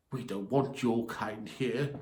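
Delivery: soft, hushed hiss under the breath. Narrator reading an elf woman's line to a man she tuts at, hissing. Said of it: "she hissed".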